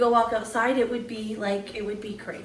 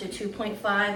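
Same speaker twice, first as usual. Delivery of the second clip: ordinary talk, nothing marked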